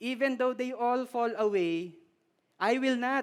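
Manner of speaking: English spoken with a Filipino accent. Quoting Peter's words to Jesus the way Filipinos say it: Filipino-accented English. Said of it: "Pagka Pilipino yung, yung accent, ganun eh".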